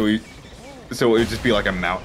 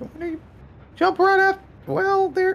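high-pitched voice. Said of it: "continue doing the high-pitched voice".

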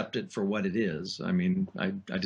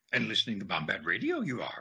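swooping, wise little alien voice. A voice actor records a station ID for Bombad Radio, Yoda voice. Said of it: "this is the voice of Jedi Master Yoda".

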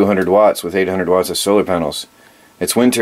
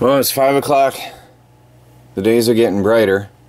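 slightly breathless, a little winded, higher pitch; 3 semitones higher than usual. Talking after working outside all day shoveling snow, a little out of breath. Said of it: "A little out of breath".

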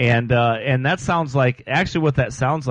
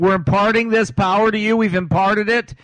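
high, mocking send-up voice; 8 semitones higher than usual. Quoting preachers who claim to impart power: imitating them mockingly. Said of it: "my voice and you say, "You're mocking them," you're right".

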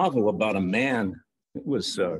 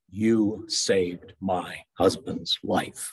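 slow, sure, strong-voiced delivery; 3 semitones lower than usual. Recalling what Pat said when they met Jesus, imitating Pat's sure, strong voice. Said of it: "in her sure, strong voice".

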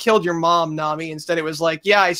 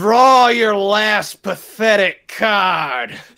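bad, slow Western cowboy drawl, "card" stretched out; 3 semitones higher than usual. Describing a card duel game, delivering a showdown line in a failed western cowboy accent. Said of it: "Why can't I do a fucking Western accent?".

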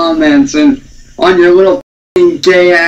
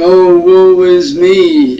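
very slow, drawn-out sarcastic whiny moan. Mocking people who complain online: mocking whiny voice. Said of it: "whiny little bitches and going".

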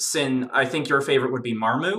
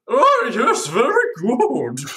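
slow, drawn-out, high, swooping sing-song voice; 9 semitones higher, 4 dB louder than usual. Imagining how the Pale King sounds: Pale King voice. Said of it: "imagining the Pale King sounding something like".

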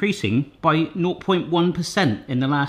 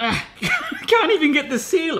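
strained, effortful voice at a much higher pitch; 12 semitones higher than usual. Trying to get the seal off a baby ice-cream tub, straining.

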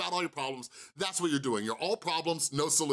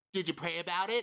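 mocking put-on stupid voice, higher; 3 semitones higher than usual. Retelling being furious, hearing a voice in my head: imitating a stupid voice. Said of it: "I hear a stupid voice in my head".

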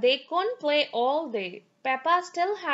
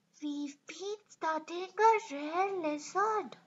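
soft, hushed half-whisper under the breath; 3 semitones higher, 7 dB quieter than usual. A narrator reads Edmund greeting Peppa's family while studying a lizard; half-whispered. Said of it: "whispered Edmund".

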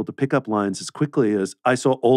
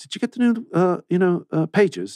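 bad put-on Manchester accent, pitch slightly raised; 8 semitones higher than usual. Retelling what a coworker asked on set: terrible Chris impression. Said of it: "That's a terrible Chris impression".

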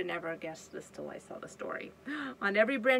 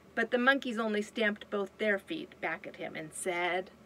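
ordinary delivery

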